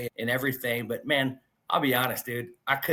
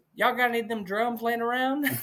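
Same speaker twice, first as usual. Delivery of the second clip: put-on Southern drawl, pitched very high; 11 semitones higher than usual. Retelling what a woman asked him, imitating her southern accent. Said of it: "in her southern accent".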